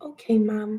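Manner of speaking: tiny, sweet-sounding, cutest little voice. A mom quoting Vela answering her, in Vela's cutest little voice. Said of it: "in like this cutest little voice".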